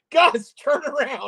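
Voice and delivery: put-on high, loud yell. Retelling watching a live stream and calling out to Gus: retelling own yell at the TV. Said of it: "I'm yelling at the T V going".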